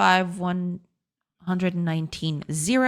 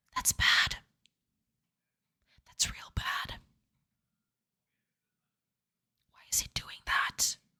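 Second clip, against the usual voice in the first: quiet, hushed whisper. Reacting as the program stops selecting things, whispering. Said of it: "Why am I speaking in whispers?".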